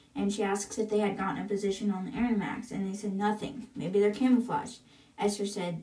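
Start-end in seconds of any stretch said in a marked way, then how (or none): none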